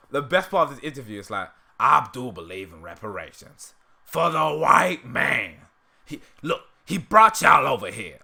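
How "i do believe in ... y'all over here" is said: loud, cartoonish, soapbox-style declaiming voice. Quoting a line from an interview as an impression: Uncle Ruckus voice. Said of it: "I did my Ruckus impression".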